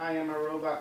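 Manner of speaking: high robotic voice. Retelling how the kids tease at wake-up: imitating kids' robot voice. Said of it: "'cause they talk like robots".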